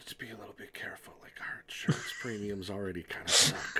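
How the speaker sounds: quick, quiet whispering.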